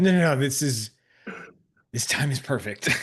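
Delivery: mock-calm while breathless. Describing answering a call mid-workout, the speaker acts out hiding breathlessness. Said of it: "panic, deep breathing. Just be like".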